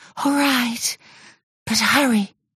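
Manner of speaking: fidgety, sighing voice. Told he must first say goodbye, she answers with an impatient sigh. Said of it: "sighed Mermaidia impatiently".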